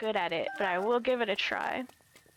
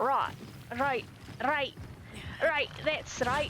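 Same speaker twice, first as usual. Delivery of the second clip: put-on Scottish accent; 4 semitones higher than usual. Showing how another man starts his scottish accent, imitating his scottish accent. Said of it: "starts his Scottish accent off by going like".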